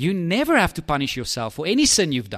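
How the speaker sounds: "never" stressed strongly, hard and heavy. Preaching that sins were placed on Christ, strong stress on never. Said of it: "now I want to emphasize this word".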